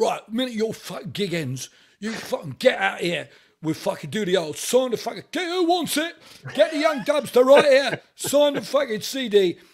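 rowdy, very loud, high-pitched Cockney holler. Retelling what a Cockney man named Tommy said after gigs, imitating Tommy's Cockney accent. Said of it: "Absolute Cockney Londoner".

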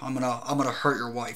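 put-on flat menacing voice. Describing a Mission Impossible 3 scene, imitating Philip Seymour Hoffman's calm threat. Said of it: "threatening with this like direct, matter of fact way".

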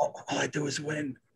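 soft, hushed, close half-whisper. Retelling what someone half-whispered in the speaker's ear, retelling a half-whisper. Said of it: "whispered to my ear".

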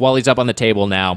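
usual speaking voice

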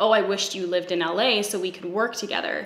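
plain

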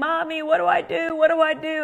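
put-on frantic, terrified, high panicked scream. Retelling a daughter's call from a car during hail: imitating a screaming daughter. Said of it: "She's screaming".

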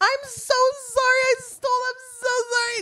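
mock shrill apologetic yell, pitched very high. Retelling how a woman yelled apologies while stealing, retelling an apologetic yell. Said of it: "she's like yelling".

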